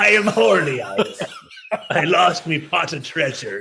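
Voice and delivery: put-on storybook pirate voice. After being told the voice sounded like a pirate, doing a Long John Silver pirate voice. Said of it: "sounded like Long John Silver".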